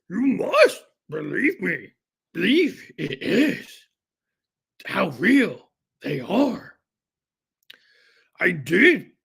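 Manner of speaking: put-on wise little alien voice. Doing a Yoda impression while joking about aliens: Yoda voice. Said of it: "talk like he's Yoda".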